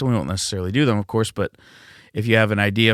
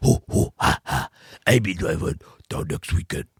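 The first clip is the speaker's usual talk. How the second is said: soft, breathy, whispery mocking voice; 3 semitones lower, 4 dB quieter than usual. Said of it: "That's my impression of Tim".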